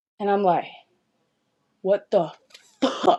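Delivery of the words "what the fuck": acted, angry and shocked blurted outburst. Retelling a shocked discovery, imitating own angry outburst. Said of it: "I'm pissed".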